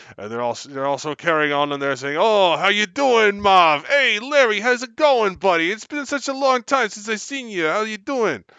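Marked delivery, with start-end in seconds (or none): 2.2-8.4 put-on very high, slow goblin voice with Brooklyn accent. Describing random goblins chatting to each other, in a Brooklyn-accent goblin voice. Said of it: "The goblins from Brooklyn".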